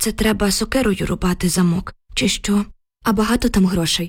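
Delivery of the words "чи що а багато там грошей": ordinary delivery, nothing marked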